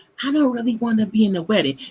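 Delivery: soft whispering. Admitting to not wanting to be in a friend's wedding: whispering. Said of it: "I'm still whispering it".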